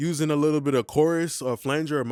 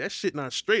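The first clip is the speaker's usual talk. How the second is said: ordinary talk, nothing marked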